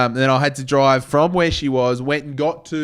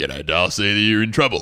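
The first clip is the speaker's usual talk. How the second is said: put-on deep, lower bloke voice, rising; 5 semitones lower than usual. Retelling driving to rescue a stranded friend: put-on lower voice. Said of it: "Man Cam has a lower voice".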